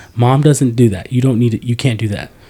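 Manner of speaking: put-on child yelling. Retelling a daughter scolding a parent: imitating a child yelling. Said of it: "It's yelling at me".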